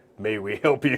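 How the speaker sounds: put-on thick, very heavy Gothic accent, polite tone. Speaker retells what the polite people said on approaching him: very heavily accented. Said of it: "in very heavily accented Gothic".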